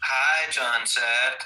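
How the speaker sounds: high, campy put-on effeminate voice. Retelling own earlier words in a put-on mocking voice: mock effeminate put-on voice.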